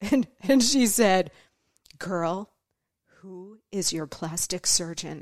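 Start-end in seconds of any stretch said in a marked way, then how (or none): 2.0-5.2 softer, dropped-voice whisper. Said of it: "she drops her voice to a whisper".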